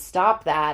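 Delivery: plain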